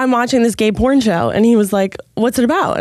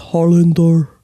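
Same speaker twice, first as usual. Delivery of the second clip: put-on Russian accent; 4 semitones lower than usual. Retelling a show character's line: imitating a Russian accent. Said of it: "one of them has Russian accent".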